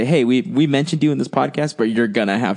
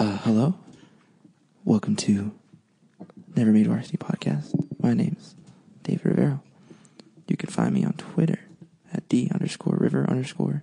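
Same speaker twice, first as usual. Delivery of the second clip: put-on public radio announcer voice; 6 dB quieter than usual. Podcast host opening the episode and introducing himself, in his NPR voice. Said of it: "I just wanted to interject with my NPR voice".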